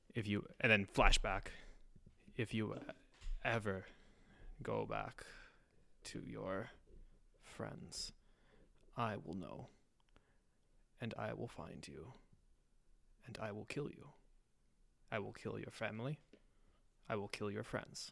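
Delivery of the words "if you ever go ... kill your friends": whispered, sinister, menacing tone. Playing a disguised hag-like figure threatening a captive: menacing threat in disguise. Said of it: "Oh, Lindenfeld".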